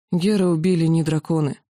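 plain

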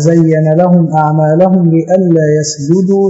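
ordinary talk, nothing marked

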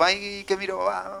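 hushed, lazy mumbling.

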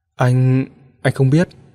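hazy, dazed, doubtful and uncertain voice. A narrator reads La Phi's answer as Mạnh Vân begs about the wire: dazed and uncertain. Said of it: "mơ màng và không có chút chắc chắn".

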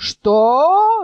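shouting. A man answers a mocking taunt about his beard: yelled. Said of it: "заорал Абдул-Надул".

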